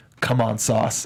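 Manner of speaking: mock intense under-breath mutter. Retelling urging on a player while watching the show: imitating a passionate under-breath mutter. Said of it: "I said very passionately under my breath".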